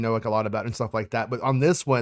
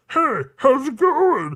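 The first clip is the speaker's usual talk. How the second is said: voice pushed up very high and loud; 6 dB louder than usual. Joking about character posters, the speaker voices Man Bun Chewbacca. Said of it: "and this is how Wookiees talk".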